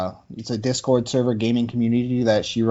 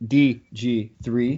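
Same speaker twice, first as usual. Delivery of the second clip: slow, deliberate, drawn-out spelling of D G three. Show host introducing themself by name, saying it slowly. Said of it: "I have to say it slow".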